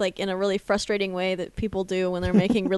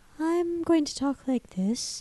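very soft-spoken, slightly high voice; 7 semitones higher, 6 dB quieter than usual. Speaker describes a YouTube tutorial account's host: soft-spoken Alan Tutorial voice. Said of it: "he speaks in a very soft spoken sort of".

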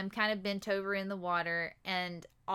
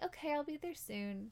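sweetest, gentle, soft, pitched-up reassuring voice; 7 semitones higher, 8 dB quieter than usual. Retelling a phone call in labor, quoting the woman she called, imitating a very sweet voice. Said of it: "like the sweetest voice".

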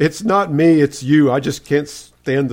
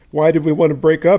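normal talking voice

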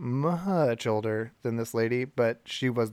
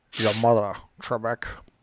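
put-on Scottish accent in a movie-star style; 3 dB louder than usual. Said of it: "doing Sean Connery".

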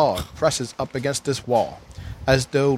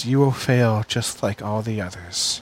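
put-on weary, sighing guard voice, lower; 3 semitones lower than usual. Voicing a guard who sighs and warns the travelers: voicing a weary guard. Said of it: "The guard sighs. He goes".

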